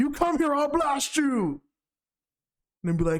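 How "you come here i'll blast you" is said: high-pitched anime rival-prince warrior voice. Retelling a cartoon scene where Vegeta refuses Goku's help: imitating Vegeta. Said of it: "He's like".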